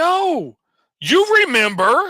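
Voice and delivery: shrill, very high, mad shout. Retelling how mad people react: imitating someone yelling. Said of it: "start yelling at you".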